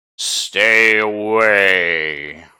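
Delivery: loud, booming, room-filling, away drawn out. Narrating a game, the speaker voices the voice rocking through the room: loud booming voice. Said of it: "a loud, booming voice rocks through the room".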